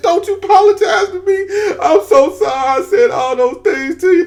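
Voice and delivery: very high, weeping, sobbing voice. Retelling telling two former rivals not to apologize: imitating his own crying. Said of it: "then I just bust out crying".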